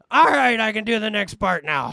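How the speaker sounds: loud, high, rough, gravelly rasp. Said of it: "if I get any gravelier".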